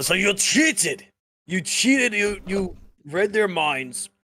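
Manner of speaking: put-on slow, high Scottish accent slipping in. Playing Aardvark, who speaks up after another player's boast, in a Scottish accent. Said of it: "I was getting a Scottish accent".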